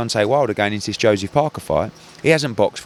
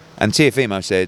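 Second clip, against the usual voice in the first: plain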